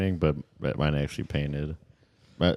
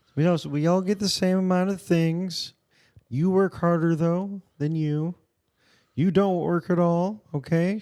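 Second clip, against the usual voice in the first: put-on puppet frog voice; 4 dB louder than usual. Doing a Barney Sanders bit: Kermit voice. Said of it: "I guess this is more Kermit".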